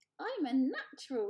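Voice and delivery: small, high, squeaky voice. Reading a story aloud, the narrator voices a bird learning to fly: squeaking. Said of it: "he squeaked".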